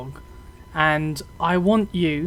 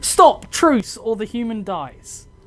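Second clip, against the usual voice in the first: full-throated screaming yell; 4 semitones higher, 4 dB louder than usual. A storyteller voices a captor threatening his human hostage: screaming. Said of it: "and he screams".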